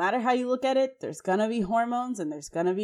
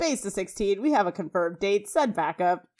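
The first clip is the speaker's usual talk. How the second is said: callout in police-radio dispatch style voice. Recapping a tv scene and quoting a character's line, radio voice. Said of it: "in like a radio voice says".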